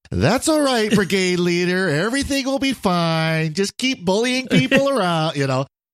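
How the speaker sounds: very high, mocking, sarcastic tone, "fine" drawn out. Retelling Liz mocking the brigade leader who is freaking out, imitating Liz, mock-sarcastic. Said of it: "Liz just starts getting sarcastic to him".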